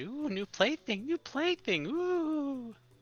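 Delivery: very high, slow, thrilled, giggling tiny fairy voices. Game narrator voicing fairies fluttering around a newly awakened player: giggling, excited fairies. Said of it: "they're all giggling and are excited".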